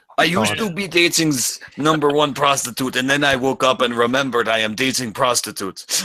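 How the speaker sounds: bad, put-on Eastern European accent. Introducing his sister in a comedy bit, in a bad Boris accent. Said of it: "I did a really bad Boris accent for that voice".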